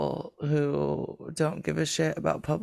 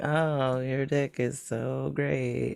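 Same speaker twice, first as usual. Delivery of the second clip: stoic, flat, unexcited, very slow, acted deadpan; 3 semitones lower than usual. Acting out a low-effort compliment about sex, mock-flat, unexcited delivery. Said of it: "It's just like dry Shannon, like just stoic. I'm not gonna work any harder".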